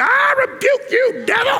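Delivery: very high, worked-up, intense, drawn out. Asking whether Michael rebuked Satan like this: intense, worked-up delivery. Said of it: "I do that pretty good, by the way. You gotta say it like that. You gotta get into it".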